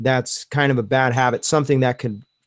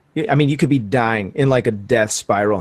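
ordinary talk, nothing marked

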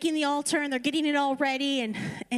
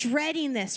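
plain

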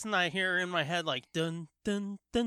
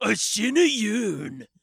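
put-on commercial announcer voice; 9 dB louder than usual. Retelling annoying old commercials, imitating the Shen Yun ad voice.

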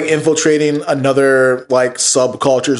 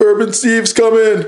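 high-pitched, slow radio announcer voice. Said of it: "got the radio voice".

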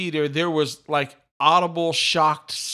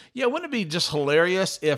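normal talking voice

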